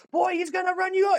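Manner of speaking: very high-pitched, yelled voice. Retelling a warning yelled at a wrestling show: imitating own past yell. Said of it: "I remember yelling at him".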